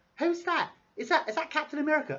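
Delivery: put-on English accent. Imitating a girlfriend whispering loudly to her boyfriend at the movies, English accent. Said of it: "I don't know why I'm doing an English accent".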